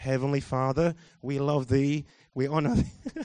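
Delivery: very low, flat, soft monotone drone. Mocking how people sound in prayer, in a monotone prayer voice. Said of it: "this is my spiritual prayer voice".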